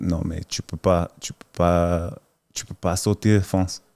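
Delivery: put-on stoic straight-faced deadpan. Retelling what the other person said in French: imitating a stoic, straight-faced delivery. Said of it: "in a real straight, stoic face".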